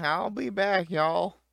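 put-on, high-pitched Southern US accent. Showing how the movie line would sound to them from a guy from the South: Southern US accent. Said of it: "of some dude from the south".

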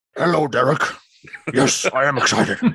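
put-on monster voice. A guest, introduced on the show, greets Derek; Venom voice. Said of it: "that was a pretty good Venom".

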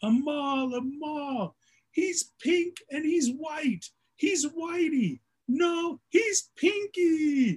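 acted, very high, drawn-out scream. Retelling how she screamed to her brother: imitating someone screaming. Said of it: "she screams to her brother".

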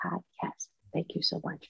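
very soft, faint, breathy whisper. Retelling how speaking was only possible sitting very still: imitating own past whisper. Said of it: "so that I can whisper whatever it is".

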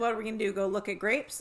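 ordinary talk

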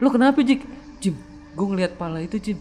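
put-on panicked voice. Retelling a scary night, acting out a friend's words, retelling a panicked question. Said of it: "Omat dengan panik".

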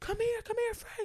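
mock screaming. Retelling a tour guide shouting to the other guide at the back, retelling a scream. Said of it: "literally he's like screaming".

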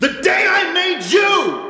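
shouting, yelling. Voicing a half-remembered voice in a vision: shouting. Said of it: "and it shouts".

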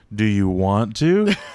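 low, very creepy voice. Retelling how he asked you this question, imitating a creepy delivery. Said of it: "he said that in the creepiest fucking way possible".

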